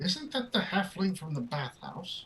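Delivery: high, hushed, leaned-over aside whisper. The queen leans over and whispers as the halfling bows: whispering. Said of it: "you hear the queen lean over and whisper".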